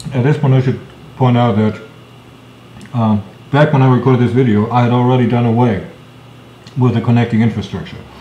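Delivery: talking with mouth full, chewing. Speaker adding a note about an earlier video recording, while eating a cookie. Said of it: "I'm currently eating a cookie".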